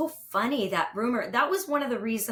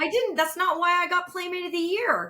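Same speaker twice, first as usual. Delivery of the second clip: imitated yelling, higher; 8 semitones higher than usual. Retelling own reaction to a TV claim: retelling screaming at the TV. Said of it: "I'm screaming at the T V".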